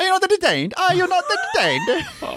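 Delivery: over-the-top fake European accent, very high, swooping. Imagining a film star doing a bad European accent: Russell Crowe with a bad European accent. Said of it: "imagine Russell Crowe like".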